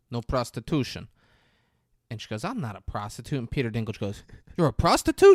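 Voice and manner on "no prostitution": put-on Russian accent. Retelling a scene, quoting the guy who points at the sign: put-on Russian accent. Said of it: "like a Russian accent".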